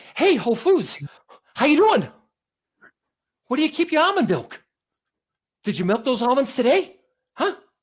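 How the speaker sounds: out-of-breath chatter. Showing another speaker a Mark Wahlberg impression. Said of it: "Always sound like he had to run back".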